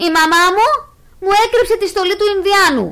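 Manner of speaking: shouting furiously. Among the upset children, Markos speaks up, shouting furiously. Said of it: "φώναξε έξαλλος".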